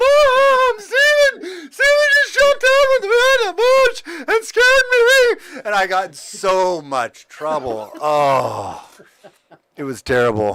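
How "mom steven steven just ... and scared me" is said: mock blubbering sobbing wail, very high and loud. Retelling how a scared girl ran into the house: imitating a sister sobbing.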